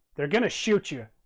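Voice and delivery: small, little voice that still carries well. A little voice speaks up from low and to the right: small but not quiet voice. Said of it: "small, small but not quiet voice that says".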